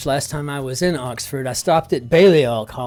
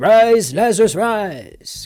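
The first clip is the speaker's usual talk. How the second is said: put-on English accent, pitched up, in lofty tones; 7 semitones higher, 4 dB louder than usual. Recalling growing up thinking ancient figures had English accents: Jesus with an English accent. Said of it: "had an English accent because Jesus said it".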